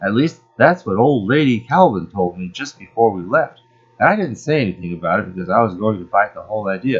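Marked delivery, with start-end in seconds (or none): none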